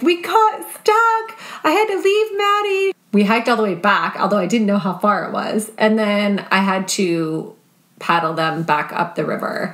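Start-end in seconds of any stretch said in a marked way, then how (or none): 0.0-2.9 very high, tearful, panicked crying, acted out. Retelling what Cordelia said when she got back, imitating Cordelia crying in panic. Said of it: "she's crying".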